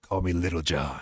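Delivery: voice dropped way down, very deep. Retelling an actor's line from Requiem for a Dream: Keith David deep voice. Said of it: "with his deep ass voice".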